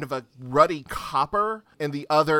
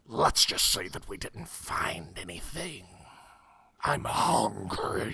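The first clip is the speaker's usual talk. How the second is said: whispered half-dragon growl, hushed creature voice; 7 semitones lower, 6 dB quieter than usual. A game master voices a half-dragon guard deciding to leave, growling half-dragon voice. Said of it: "They look like a hybrid of a dragon and a human, but not a dragonborn. Dragonborns have a certain amount of elegance to them. These things are twisted. They are ugly and hideous to behold. / They look".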